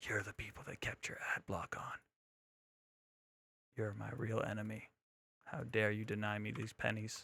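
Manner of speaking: soft, hushed whisper under the breath. Streamer during an ad break, addressing viewers who kept ad block on, whispering. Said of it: "I don't know why I'm whispering either".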